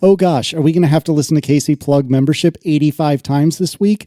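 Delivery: ordinary delivery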